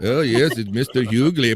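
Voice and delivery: put-on English accent. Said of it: "he always does his [name] accent".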